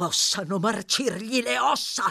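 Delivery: furious, through clenched teeth. Narrator reads a stranger's curse after Oliver apologizes to him: furious, through clenched teeth. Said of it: "inveì l'uomo a denti stretti, in preda a una furia terribile".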